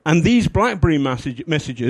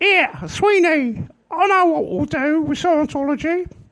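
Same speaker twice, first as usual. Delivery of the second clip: put-on little girl voice; 13 semitones higher than usual. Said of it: "she has the voice of a kind of 8-year-old girl".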